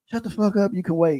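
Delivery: very high, shrill, loud hollering. Retelling a drive-through customer yelling back at the man behind her, imitating someone hollering. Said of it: "she was hollering back at him like".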